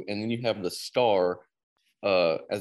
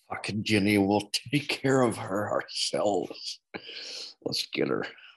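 creepy-sounding, eerie put-on voice. Performing an impersonation for listeners, in a creepy impersonation voice. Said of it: "My freaking impersonation sounds so creepy".

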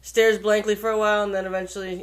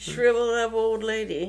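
plain

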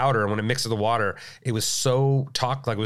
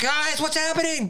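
mock shrill scream, pitched very high. Retelling being stuck as cold water rose to the neck, reenacting a scream. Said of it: "I'm screaming like".

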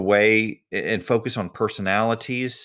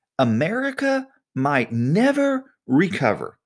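hugely exaggerated dramatic delivery, high and slow; 6 semitones higher than usual. Mimicking the tone of campaign ads, in a mock-dramatic voice. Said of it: "I tried to say that in my most dramatic voice".

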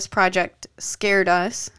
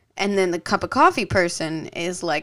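ordinary talk

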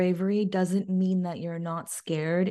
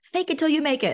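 high, full-lungs shout; 8 semitones higher, 3 dB louder than usual. Retelling how the step team coach rooted the team on: imitating a coach shouting. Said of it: "she would literally shout at the top of her lungs".

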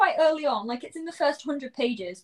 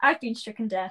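ordinary talk, nothing marked

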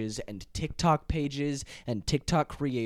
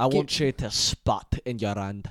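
put-on Scottish accent, lower and louder; 3 semitones lower, 5 dB louder than usual. Imitating a woman's line as if she were Scottish: imitating a Scottish accent. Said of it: "That's how she would sound like if she was Scottish".

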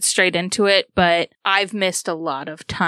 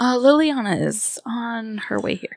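low-key, quiet voice drawing no attention; 4 semitones higher than usual. Voicing a character who quietly cuts into the others' conversation: very quietly. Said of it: "very quietly, almost as if to not bring attention".

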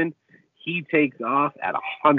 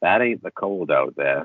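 put-on creepy voice in a much lower pitch; 6 semitones lower than usual. Quoting a favorite movie line, the speaker does the character's put-on creepy voice. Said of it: "he's doing his creepy voice".

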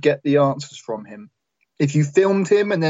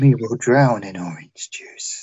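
put-on eerie, creepy, demonic child voice; 5 semitones lower than usual. Playing the creepy adopted child Jeffrey: creepy child voice. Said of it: "creepy Jeffrey".

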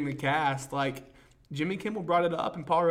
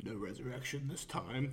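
low-pitched, very soft voice; 4 semitones lower, 12 dB quieter than usual. Retelling how Thanos kills Loki: bad Josh Brolin impression. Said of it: "a very bad Josh Brolin impression".

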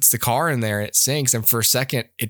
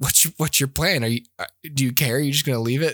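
ordinary talk

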